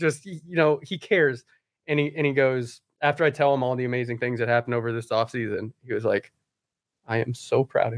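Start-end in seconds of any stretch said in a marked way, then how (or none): 7.1-8.0 sincere, proud, caring fatherly voice. Retelling a manager's praise: imitating Torrey's caring fatherly voice. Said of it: "just the most caring, like, fatherly voice".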